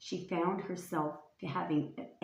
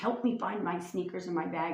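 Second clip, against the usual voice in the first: ordinary delivery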